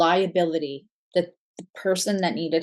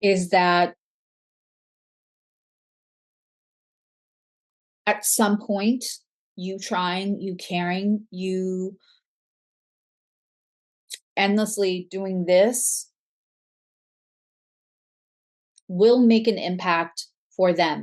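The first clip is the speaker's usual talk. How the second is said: fighting tears, pushing the words through. Encouraging listeners who keep trying and caring, holding back tears. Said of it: "and I'm holding back tears".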